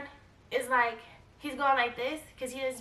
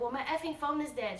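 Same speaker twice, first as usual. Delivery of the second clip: ordinary delivery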